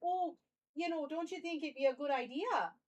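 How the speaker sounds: Midwestern American accent. Trying out a voice for an archivist character, in a Midwestern accent. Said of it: "I can make it Midwestern".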